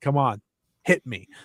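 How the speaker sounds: stoic, unflinching, no-nonsense tone. Retelling how Tam acted mid-match: imitating Tam's straight face. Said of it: "She is straight face".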